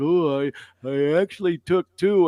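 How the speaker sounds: mock earnest, careful, cautionary tone. Retelling how the other speaker mentioned taking two: imitating a cautionary tone. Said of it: "a cautionary tone to it".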